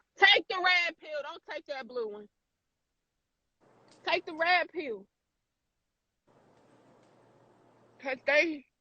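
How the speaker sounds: speaking through tears. Speaker talking with another person, crying while speaking. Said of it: "I'm sorry, I'm over here crying".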